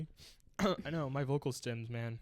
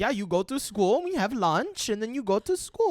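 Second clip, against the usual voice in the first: put-on very loud, laid-on Eastern European accent; 9 semitones higher, 11 dB louder than usual. Acting out Melania in a cute video: Melania accent. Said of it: "that was a good accent on my part".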